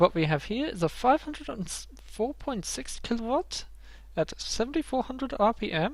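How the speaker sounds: precise put-on German accent. Reviewing an engine, the presenter reads out its figures: put-on German accent. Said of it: "I'm trying to do this very German".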